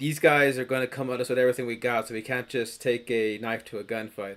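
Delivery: plain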